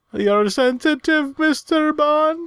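exaggerated emotional imitation. Imitating a line said to Mr. Bond, over-emotional impression. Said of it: "your impression right there was way more emotion".

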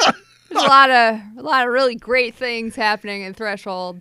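very loud, dry, sarcastic delivery. Praising an episode of Star Trek called the worst: sarcastic. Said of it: "And I say sarcastically".

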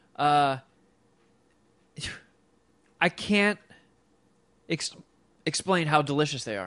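speaking through hiccups. Describing cheat-meal snacks to another person, hiccuping. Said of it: "I'm trying to get rid of these hiccups".

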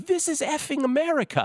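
put-on loud, very high, shrill, belted British accent. Retelling a reported scream at a security person: loud British accent. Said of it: "in a louder British accent".

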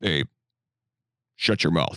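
harsh, low-pitched police officer voice. Imagining the officer home from work telling his partner: impression of the officer. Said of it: "It's a good impression of him".

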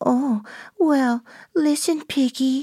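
put-on very high, little baby voice. Discussing voice qualities, demonstrating a high-pitched baby voice. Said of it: "that's very high-pitched".

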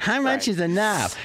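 high, whining, put-upon grumble. Repeating a quoted line, this time in a whiny voice. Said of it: "But in a whiny voice".

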